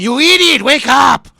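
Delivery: put-on cartoon dog voice, screaming. Picturing a dog waking its owner, screaming as Ren. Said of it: "he's screaming".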